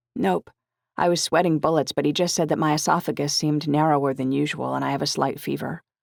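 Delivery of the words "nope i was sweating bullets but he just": plain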